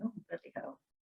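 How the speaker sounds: soft, whispered groan, self-critical tone.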